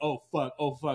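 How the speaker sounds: mock panicking, slow, drawn-out, repeated cursing. Retelling a police stop, imitating Cassandra panicking. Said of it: "Just calm down".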